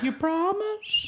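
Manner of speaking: squeaky, very high-pitched cartoon character voice. Acting out the reply in the comedy bit: Herbert the Pervert voice. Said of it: "it cuts to Herbert being like".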